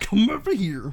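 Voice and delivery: high, loud clown voice, called out. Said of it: "You sound like Pennywise the Clown".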